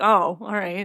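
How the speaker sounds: put-on disappointed voice. Retelling a scene where Dean was disappointed: imitating a disappointed Dean. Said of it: "he actually was pretty disappointed".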